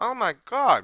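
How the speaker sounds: loud, high blurt through a full mouth. Tasting rice with kale, talking with food in mouth. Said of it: "I have food in my mouth".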